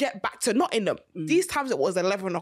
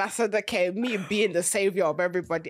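plain

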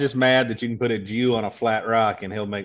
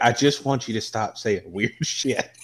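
ordinary talk

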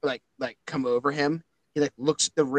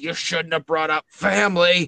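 loud, angry, furious shouted yell; 4 semitones higher, 5 dB louder than usual. A game master narrates a player's character pinning someone down, yelling. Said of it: "as you're yelling".

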